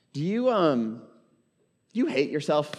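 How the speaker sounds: gentle, tender voice. Asking listeners a personal question about how they treat themselves: tender. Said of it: "I'm saying that real tenderly".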